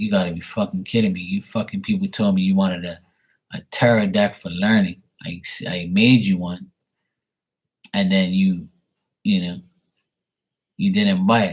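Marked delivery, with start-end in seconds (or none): none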